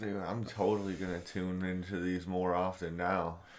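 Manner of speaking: heavy, dripping sarcasm with over-eager tone. Saying they'll tune in more often, sounding sarcastic. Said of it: "I know that sounded sarcastic as fuck".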